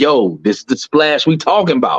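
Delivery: plain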